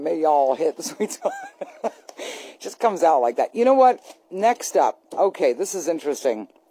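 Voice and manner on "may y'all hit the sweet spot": put-on drawling Southern accent. Speaker repeats his own sign-off line, in a Southern drawl. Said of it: "I don't know why I do that with the Southern drawl every time".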